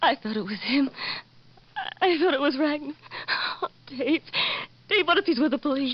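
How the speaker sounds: words coming through tears, crying. [name] speaks to dave after a visitor leaves, crying. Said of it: "Stop crying, [name]".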